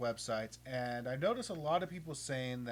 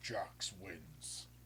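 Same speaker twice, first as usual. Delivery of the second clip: breathy, whispered fighting-game announcer voice; 5 semitones lower, 8 dB quieter than usual. Announcing a match result in Mortal Kombat voice. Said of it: "I have to do it in my Mortal Kombat voice".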